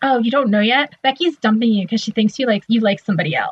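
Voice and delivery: ordinary talk, nothing marked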